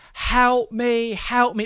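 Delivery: mock scream at full volume. Retelling the mother outside the front door, imitating someone screaming at the top of her lungs. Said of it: "just started screaming".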